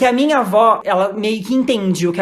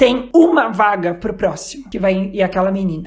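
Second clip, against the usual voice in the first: plain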